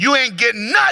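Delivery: acted-out loud call carrying from a distance. Retelling a woman answering from the back room, retelling a yell. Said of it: "she yells from the back room".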